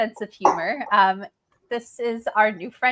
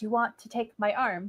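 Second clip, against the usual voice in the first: soft, hushed half-whisper under the breath; 6 dB quieter than usual. A player speaks in character to another character, half-whispering. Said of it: "like in a whisper".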